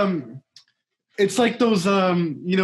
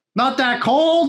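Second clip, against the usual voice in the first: put-on, higher-pitched weather-report announcer voice. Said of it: "That's actually a really good fucking impression".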